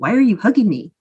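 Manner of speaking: ordinary talk, nothing marked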